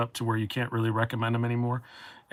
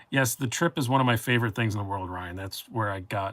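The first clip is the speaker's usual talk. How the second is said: plain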